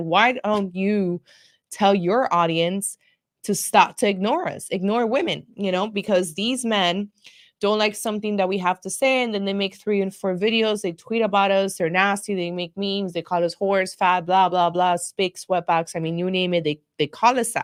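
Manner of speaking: ordinary talk, nothing marked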